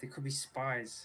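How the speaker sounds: whisper dragged out very slowly. Warning another character in the scene that they could be spies: whispering. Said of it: "he's gonna whisper".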